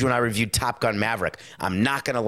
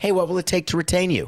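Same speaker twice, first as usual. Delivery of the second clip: mocking, sarcastic, pitched-up voice; 8 semitones higher than usual. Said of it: "you could say it with sarcastically".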